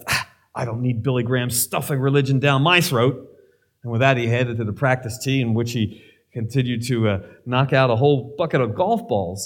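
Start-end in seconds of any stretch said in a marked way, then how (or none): 0.1-3.3 mock-disgusted tone. Telling a golf story, quoting another pro's reply, mock-disgusted. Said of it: "the pro said with disgust".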